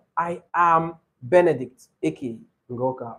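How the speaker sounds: slow, clear, deliberate, each word distinct. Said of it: "please say them slowly".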